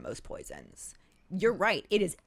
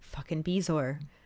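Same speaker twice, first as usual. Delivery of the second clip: ordinary talk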